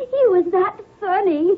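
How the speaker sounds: words breaking through laughter. Answering why she is crying, laughing while talking. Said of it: "I'm laughing at him".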